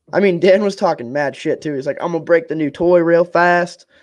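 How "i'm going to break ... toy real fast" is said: horrible put-on Texas accent, botched all around. Speaker quotes someone's trash talk while discussing a rivalry; bad Texas accent. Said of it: "that turned into a Texas accent".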